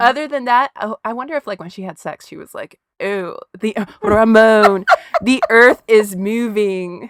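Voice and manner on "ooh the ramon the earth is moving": loud, very slow, every word drawn out. Quoting a favorite line from Romy and Michelle: Mira Sorvino voice. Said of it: "my favorite line from Romy and Michelle".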